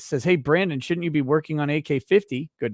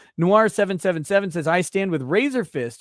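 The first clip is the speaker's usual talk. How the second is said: ordinary talk, nothing marked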